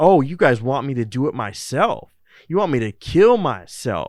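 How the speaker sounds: loud, mock cocky, smug, self-satisfied voice. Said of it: "he's all smug about it".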